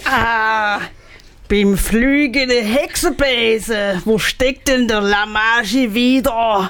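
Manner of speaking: put-on Swabian accent with drawn-out ah. Acting out a story scene as the arriving witch character, in a Swabian accent. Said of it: "Das hört sich voll schwäbisch an".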